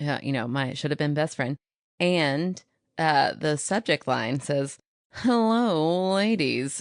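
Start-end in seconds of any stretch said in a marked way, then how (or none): 5.1-6.8 high voice, long drawn-out hello.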